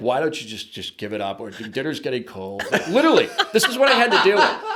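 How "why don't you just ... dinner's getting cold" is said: put-on teasing, needling voice. Retelling a fishing partner teasing from the side, imitating Larry. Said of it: "That's a good Larry impression".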